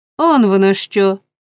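usual speaking voice

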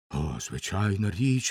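ordinary talk

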